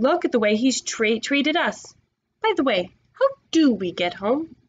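usual speaking voice

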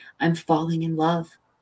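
plain reading voice

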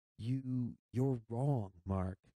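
stuttering out the words. Narrator reading Jody answering Mark at the window, stammering. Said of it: "I stammered".

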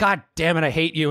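acted, put-on angry outburst. Retelling a musician's reaction to his record company demanding a hit, mock-angry outburst. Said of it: "And he gets all angry".

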